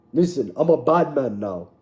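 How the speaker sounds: put-on Jamaican-sounding accent. Imitating a fighter boasting about himself: Izzy Adesanya impression, Jamaican-sounding. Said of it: "Why is that Jamaican?".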